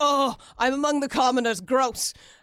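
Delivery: loud, haughty, sneering, snooty upper-class voice. Describing the voice she always imagines, the speaker does a put-on snooty old-WASP voice. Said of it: "that's what I always envision the voice".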